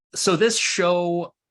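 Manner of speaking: slow, high, drawn-out emphasis on the word show.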